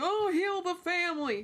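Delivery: fake pitiful, sappy, sorrowful pleading, high and drawn out. Retelling how a man pleaded: mocking a sad, pitiful plea. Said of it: "But instead he's like".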